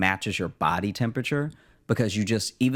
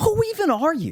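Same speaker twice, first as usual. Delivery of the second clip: put-on angry man voice, higher and louder; 4 dB louder than usual. Retelling a couple's fight at the next table: imitating an angry man. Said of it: "now they're too pissed to whisper".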